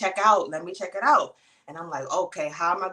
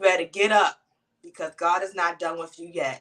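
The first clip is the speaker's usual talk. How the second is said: put-on, stern scolding voice. Retelling the grandmother's words to get up: imitating grandmother speaking sternly. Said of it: "looking at me sternly".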